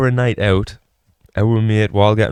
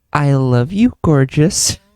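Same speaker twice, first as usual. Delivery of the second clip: put-on sappy, high-pitched baby-talk voice; 6 semitones higher, 4 dB louder than usual. Quoting word for word what he said, in a baby voice. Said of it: "What he said in the baby voice".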